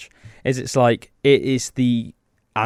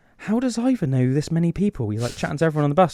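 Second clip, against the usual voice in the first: put-on whisper, higher pitch; 4 semitones higher than usual. Retelling what their grandma whispered to their granddad on a bus, retelling a whisper. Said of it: "my grandma like whispered to my granddad".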